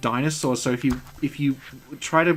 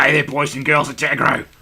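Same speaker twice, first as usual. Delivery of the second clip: put-on puppet voice, louder; 6 dB louder than usual. Describing a puppet from a kids' show, doing the Agro puppet voice. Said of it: "And he talked like this".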